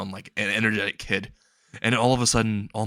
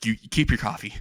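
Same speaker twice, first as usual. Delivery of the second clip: plain reading voice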